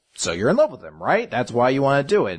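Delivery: ordinary talk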